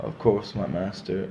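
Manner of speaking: put-on indifferent voice. Comparing how Anakin and Darth Vader answer their master, mock-indifferent Darth Vader. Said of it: "kind of like I don't care".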